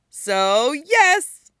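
bright cheerful tone. Narrator reads Stiles teasing Allison while holding her phone, bright tone. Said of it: "Stiles says brightly".

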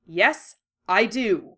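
short, sharp, snapped delivery. Narrator reading, a character answering a pointed question: snapped. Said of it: "he snapped".

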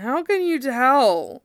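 spoken through a yawn. Narrator reading Zack's question to Cloud, asked through a yawn. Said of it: "Zack asked through a yawn".

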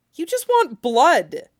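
high, desperate plea. Narrating Ed answering Mustang as Mustang touches his bleeding thigh: desperate. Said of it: "Ed said desperately".

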